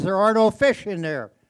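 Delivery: big, loud, resounding, booming voice. Telling a joke about an ice fisherman hearing a voice, booming voice. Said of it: "the booming voice says".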